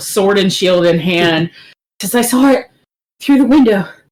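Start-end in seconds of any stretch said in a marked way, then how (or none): 2.2-3.9 breathless, winded, rushed and high-pitched. Voicing a character who runs up the stairs: out of breath. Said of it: "very winded".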